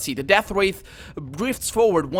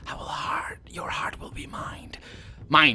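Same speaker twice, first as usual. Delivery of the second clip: breathy, hissing, whispered undead wraith voice; 3 semitones lower, 6 dB quieter than usual. The game master voices the Death Wraith reaching for the player, hissing. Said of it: "It hisses".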